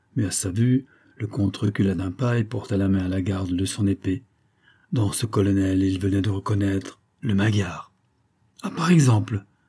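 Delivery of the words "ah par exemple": exclaimed, higher pitch. A colonel greeting a count who backs away from him, exclaimed. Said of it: "s'écria celui-ci".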